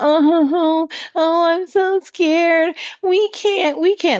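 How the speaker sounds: very high, slow, drawn-out crybaby whimper. Mocking the ones who went running to their big daddy: mock whining. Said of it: "These bitch babies are whining".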